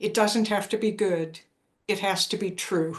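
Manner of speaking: ordinary talk, nothing marked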